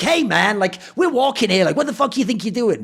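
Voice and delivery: put-on rude, nasty, confrontational tone. Retelling what a stranger in a queue said: imitating a rude, shitty remark. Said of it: "they sort of said it in a really shitty way".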